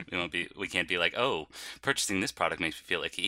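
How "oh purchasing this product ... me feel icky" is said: normal talking voice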